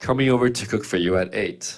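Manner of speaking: ordinary talk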